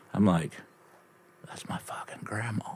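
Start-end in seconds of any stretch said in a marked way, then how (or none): 1.5-2.7 unvoiced whisper, muttered under the breath.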